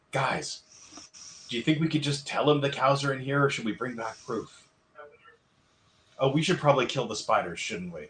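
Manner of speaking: hushed whisper. Searching a cobwebbed spot with the group, asking the others, whispering. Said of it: "Sorry, I'm gonna whisper".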